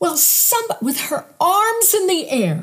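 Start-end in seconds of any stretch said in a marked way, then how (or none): 0.0-0.6 put-on woman's yell, higher. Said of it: "She starts yelling at me like I was the bad one".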